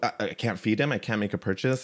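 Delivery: ordinary delivery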